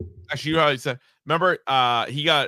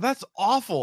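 put-on fatherly disappointed tone, higher; 6 semitones higher than usual. Retelling what was said to a friend showing a lip tattoo: imitating own disappointed tone. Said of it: "with the disappointment only, like, a father could have".

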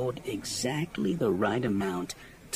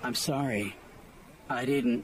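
flat, level, respectful and deferential monotone. Reading a novel, the narrator voices a character apologising to his master, in deferential monotone. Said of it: "his voice dropping to his usual deferential monotone".

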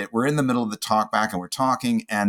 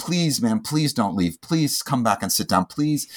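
mock pleading, acted-out begging tone. Recounting begging a woman who walked out of the room, retelling a plea. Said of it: "I was pleading with her".

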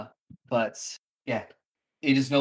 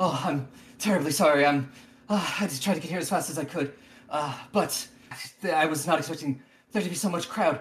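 female orc monster voice; 4 semitones higher than usual. Game narrator voices an orc woman coming up to the players: orc woman voice. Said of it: "she comes up to you and just goes".

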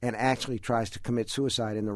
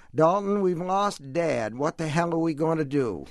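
Down East Maine accent, pitched up; 6 semitones higher, 4 dB louder than usual. Reading a story aloud, narrator voices Ava's line: Down East accent. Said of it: "You have to get that Down East accent".

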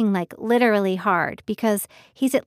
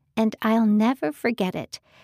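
ordinary delivery

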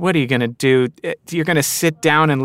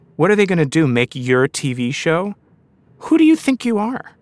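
cruel, menacing, vicious, sinister voice. Describing the inner voice that comes while writing for the screen, in a mock vicious, sinister voice. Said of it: "this very vicious, sinister voice".

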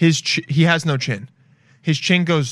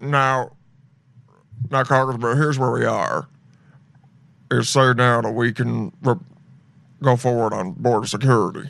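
put-on evil-sounding old Southern senator voice; 2 semitones lower than usual. Reacting to a clip of a senator speaking, imitating Mitch McConnell's voice. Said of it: "his voice is what I".

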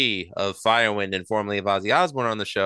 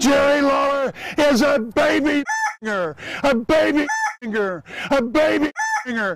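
put-on cartoon cowboy voice; 4 dB louder than usual. Replaying a Terry Funk promo with Yosemite Sam swapped in, Yosemite Sam voice. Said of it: "replace Terry Funk with Yosemite Sam".

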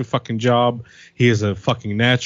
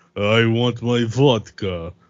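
slow, drawn-out fake Russian accent. Showing off an accent they claim to do well: put-on Russian accent. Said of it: "I could do a pretty good Russian accent".

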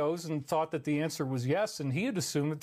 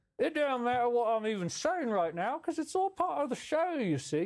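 put-on vague Irish accent, high and very slow; 7 semitones higher than usual. Staying in a comic persona and talking on: vaguely irish accent. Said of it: "say words in a vaguely Irish accent".

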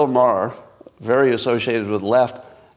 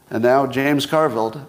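ordinary delivery

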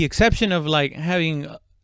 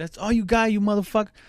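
mock mad, angry, jeering taunt, pitched up; 6 semitones higher than usual. Retelling a robber's taunt during a robbery: imitating an angry robber. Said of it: "one of the guys got mad at him".

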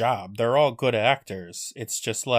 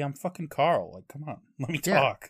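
angry, mad, fed-up, irritated griping; 3 semitones higher than usual. Imagining what Carl would say when he cannot talk: pretend mad Carl. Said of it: "He'd be so mad".

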